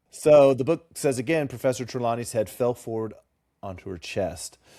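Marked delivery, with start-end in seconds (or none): none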